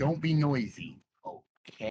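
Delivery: hushed whisper. Telling the party to keep quiet while sneaking: whispering. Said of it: "You're whispering".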